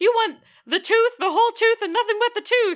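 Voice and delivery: shrill, very loud, high wrestler-style scream. Describing a movie hockey player shouting catchphrases on the ice: retelling the Tooth Fairy's screams. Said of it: "he's screaming all these catchphrases".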